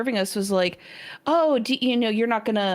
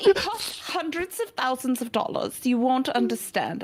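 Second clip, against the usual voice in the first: unconvincing put-on German accent; 2 semitones higher than usual. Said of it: "that was a German accent".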